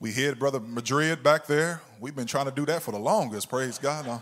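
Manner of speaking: playful, good-natured teasing tone. Speaking about someone who just played, teasing. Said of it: "I'm teasing him".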